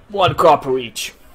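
loud, very manly, booming voice. Narrating a tavern scene as tankards of ale hit the table, very manly Matilda voice. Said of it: "Very manly voice".

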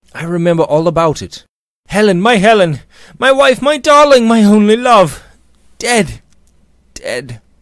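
very high, very loud, shrill impatient outcry. George, raising himself in bed, speaks to his friend Robert; crying out impatiently. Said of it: "cried George impatiently".

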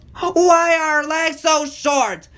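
complaining voice, pitched very high. Narrator reading a fleeing character's line in a children's story, complaining. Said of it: "Brainy complained".

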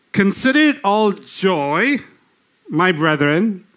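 very slow reading, each word drawn out, joyful. Speaker reading a bible verse aloud to listeners, very slow reading. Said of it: "I'm going to read it very slowly".

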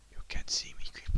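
unvoiced, sneaky whisper.

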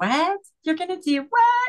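very high, tearful, disbelieving crying voice. Retelling her reply to her daughter's promise, retelling her own crying. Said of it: "And I'm crying".

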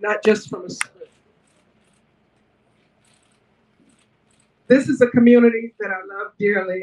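holding back tears. Thanking the community after hearing people speak from the heart: holding back tears. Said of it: "try and get through this without crying".

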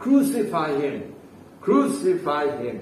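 plain

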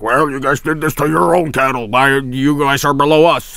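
put-on alien overlord voice. Imagining alien overlords answering human protests, in an alien voice. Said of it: "Alien voice".

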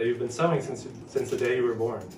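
ordinary delivery, nothing marked

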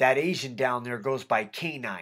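ordinary delivery

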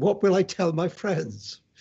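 rather anguished, pained, lamenting tone. Recalling his father's reaction to wanting to be a writer, the speaker quotes him, retelling in anguished voice. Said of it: "in a rather anguished voice".

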